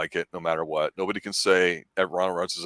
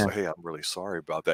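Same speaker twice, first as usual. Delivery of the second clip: put-on smooth, suave ladies' man voice; 4 dB quieter than usual. Retelling a movie scene: Ryan Reynolds smooth ladies' man voice. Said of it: "he goes into Ryan Reynolds' smooth ladies' man, uh, voice".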